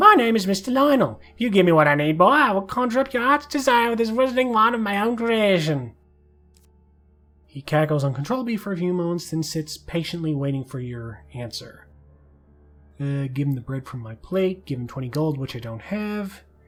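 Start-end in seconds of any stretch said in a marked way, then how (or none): 0.0-5.9 high, loud, raised goblin voice. A narrator voices a goblin disguised as a human addressing the listener: Mister Lionel goblin voice. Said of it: "Sorry for the voices".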